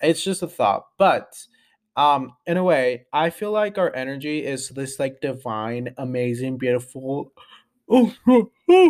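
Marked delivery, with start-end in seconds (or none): 6.0-8.9 speech stretched by a yawn. Describing energy as divine and beautiful, yawning while talking. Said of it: "sorry, I'm yawning".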